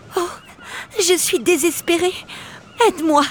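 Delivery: high, quavering, tremulous, trembling voice. Narrator reads the mermaid's line, in a trembling voice. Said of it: "La voix tremblante, elle demanda".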